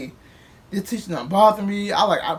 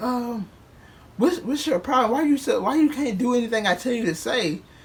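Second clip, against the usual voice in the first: put-on bossy, domineering, demanding tone; 4 semitones higher than usual. Retelling what the woman said on coming outside: imitating a slave-master tone. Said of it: "like I was a fucking slave".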